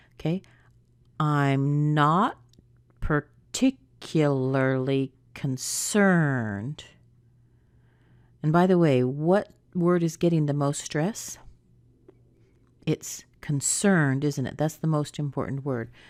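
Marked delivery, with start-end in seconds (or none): 1.2-6.9 slow, careful, deliberate, much slower delivery. Coach leading learners through a practice sentence, slow and careful. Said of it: "Let's take it slow".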